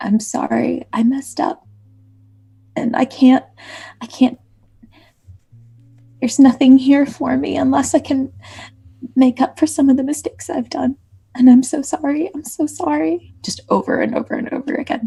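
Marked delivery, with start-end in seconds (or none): 0.0-13.3 hushed whisper, pitched higher. Kneeling with head on the ground, apologizing to friends: whispering an apology. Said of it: "just whispering".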